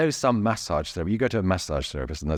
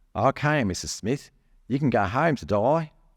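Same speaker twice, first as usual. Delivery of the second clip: put-on Australian accent, pitched up; 5 semitones higher than usual. Retelling what he said while discharging her, in an Australian accent. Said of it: "excuse my Australian accent".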